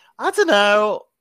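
shrill, very high-pitched, very loud outburst. Unsure about a rule on opening with the weather, the speaker trails off: high-pitched voice. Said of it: "my voice went really high-pitched then".

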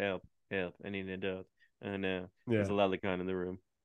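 low, bone-dry, emotionless flat deadpan. Describing a character's inner thoughts, a speaker quotes him imitating a deadpan delivery. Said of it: "he always says everything deadpan too".

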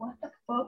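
acted-out incredulous tone. Telling a story about Andy and Spielberg, act out your own incredulous reaction. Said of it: "Y yo, así de".

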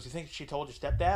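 ordinary delivery

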